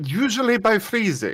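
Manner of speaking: high, thick, put-on Russian accent. Voicing a character who answers how to keep something together: russian accent. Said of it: "I'm giving him more of a Russian accent".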